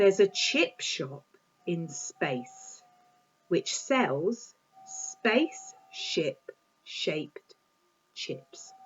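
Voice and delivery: very slow, every word deliberately and carefully articulated. Speaker reading a tongue twister aloud, taking time, slow careful delivery. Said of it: "So I'm going to take my time".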